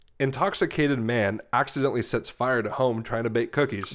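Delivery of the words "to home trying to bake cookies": ordinary talk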